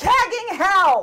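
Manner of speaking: sudden, loud, high screamed exclamation. A character screams as chaos erupts around them, screaming. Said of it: "And Alva screams".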